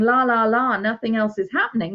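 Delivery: ordinary talk, nothing marked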